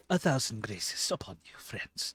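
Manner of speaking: partly whispered. A game master voices Kassar greeting the party in the morning, Kassar's half whisper. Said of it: "he's like in this weird like half whisper state".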